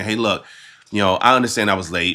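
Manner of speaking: ordinary talk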